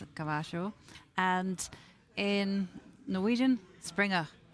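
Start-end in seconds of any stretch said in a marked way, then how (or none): 0.0-0.7 "caballo" said with South American Spanish accent. Speaker demonstrates how a word is pronounced, south american accent. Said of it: "I say it with a South American accent".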